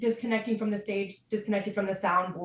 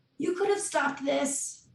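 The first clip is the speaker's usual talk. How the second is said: high-pitched voice calling out loudly; 6 semitones higher, 3 dB quieter than usual. Voicing Doc shouting at the group: high-pitched shouting voice. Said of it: "an even higher pitched voice shouting".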